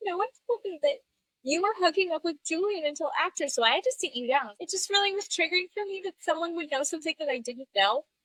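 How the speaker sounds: crying, high-pitched, tearful voice. Retelling an emotional after-show interview: imitating Lala crying. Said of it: "She's like, crying".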